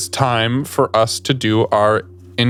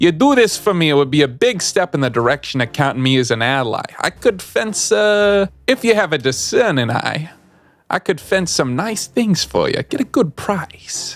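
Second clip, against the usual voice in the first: put-on heavy New York wiseguy accent, if drawn out; 4 semitones higher than usual. Narrating a contact looking for new associates, voice his offer in a New York accent. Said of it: "Tommy Benson is definitely has a New York accent".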